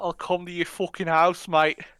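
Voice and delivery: loud menacing southern English accent. Friends trying out accents, one does a Southern English accent. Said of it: "Is that Southern English?".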